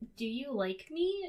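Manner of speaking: put-on bashful, nervous stammer, tripping on words. Recapping a TV episode's ending, imitating a character's nervous stammering. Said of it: "kind of stammering".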